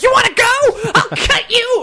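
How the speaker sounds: very high, loud, frenzied, crazed little-dog voice. Describing a half-Chihuahua meeting other dogs in the park: voicing Indy going crazy. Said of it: "Indy just starts going crazy".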